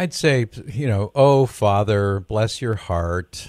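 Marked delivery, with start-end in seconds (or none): 1.1-3.5 sarcastic, sugary slow tone. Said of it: "I guess I'm sounding kind of sarcastic".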